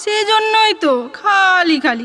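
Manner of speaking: slow, tearful, choked sob on verge of crying. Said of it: "খালি কান্না পাচ্ছে".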